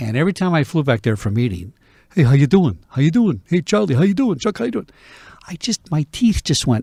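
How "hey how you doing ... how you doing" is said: put-on New Jersey accent. Retelling how people greeted at meetings back there: imitating a New Jersey accent. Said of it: "that's not my dialect".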